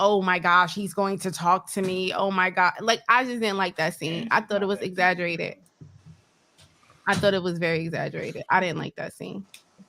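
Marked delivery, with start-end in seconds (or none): none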